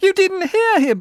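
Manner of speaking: voice climbing to a very high, loud shriek. Narrator reads a man's protest as the guards step forward, voice rising to a shriek. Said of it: "The man's voice rose to a shriek".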